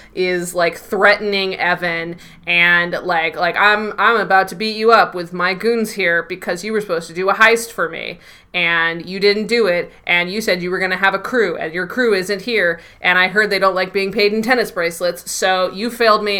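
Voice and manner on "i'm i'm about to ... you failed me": usual speaking voice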